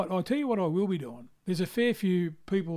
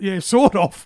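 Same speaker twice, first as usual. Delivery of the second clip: very loud, booming yelled voice; 12 dB louder than usual. Retelling how someone in the corner yelled out an answer: imitating someone yelling. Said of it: "she yelled out".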